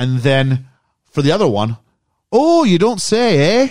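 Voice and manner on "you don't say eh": Minnesota accent, very high pitch, slow pace. Describing a film for others to guess: minnesota accent. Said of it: "I'm doing Minnesota nice / Canadian".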